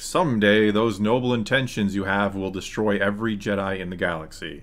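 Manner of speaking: ordinary talk, nothing marked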